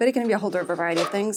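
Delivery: excited, fast, rattled-off talk.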